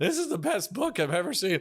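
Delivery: voice cracking and breaking, squeaking up high mid-line. Speaker recalls being unemployable on TV when his voice started to break: imitating his own breaking voice. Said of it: "I just was talking like this".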